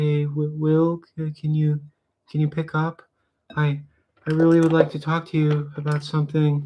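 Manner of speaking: high-pitched, halting, stumbling delivery. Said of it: "hear [name] on the, on the line being like".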